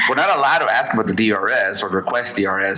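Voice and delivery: normal talking voice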